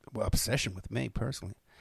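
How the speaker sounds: ordinary delivery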